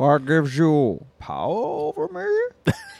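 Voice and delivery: very slow, swooping, drawn-out voice, each word stretched. Doing an impersonation another speaker calls a favorite: Bane impression. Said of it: "one of my favorite impersonations that you do".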